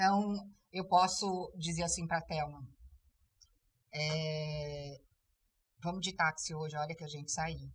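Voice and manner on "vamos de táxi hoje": level, flat tune through hoje, no rise. Saying a question without question prosody: flat ending, no rise. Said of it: "É uma pergunta, mas não tem, não tem a prosódia da pergunta".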